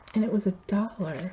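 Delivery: soft, hushed, secretive aside, kept quiet. Showing a craft purchase and its price, joking: said quietly. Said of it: "I say that quietly".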